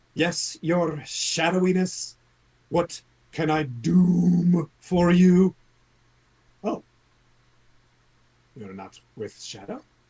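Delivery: high, loud creature voice, stretched-out doom. Voicing a creature that answers the player in the keep: voicing a creature. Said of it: "this creature says to you".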